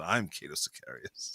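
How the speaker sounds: put-on spoken with an Italian accent. Imagining a hero introducing himself: Cato Sicarius in an Italian accent. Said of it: "speaking in an Italian accent".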